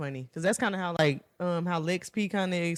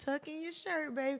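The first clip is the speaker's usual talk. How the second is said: put-on little old lady voice, higher and quieter; 8 semitones higher, 9 dB quieter than usual. Retelling what a little old lady at school would say: imitating Miss Curtis. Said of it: "this little old lady at our school, named Miss Curtis".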